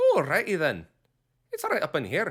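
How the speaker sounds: so-so put-on Scottish accent, high and swooping. Showing the phrase used to get into a character's voice, Scottish accent.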